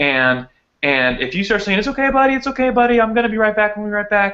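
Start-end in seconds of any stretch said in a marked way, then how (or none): 1.8-4.3 high, cheery, jovial, soothing, reassuring voice. Explaining how owners reassure a dog before leaving: really higher-pitched tone. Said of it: "in a really higher pitched tone".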